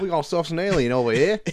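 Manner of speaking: put-on Australian accent. Joking about a film starring Chris Hemsworth: Chris Hemsworth Australian accent. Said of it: "'Cause that's how Chris Hemsworth talks".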